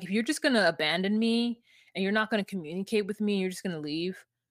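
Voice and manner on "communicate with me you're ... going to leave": ordinary talk, nothing marked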